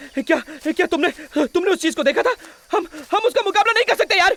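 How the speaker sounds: loud, frantic, panicked stammering babble, way up high. Panicking after a companion was swallowed by a snake: panicked babbling. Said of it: "चुप हो जाओ".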